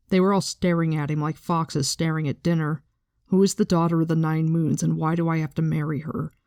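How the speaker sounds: plain reading voice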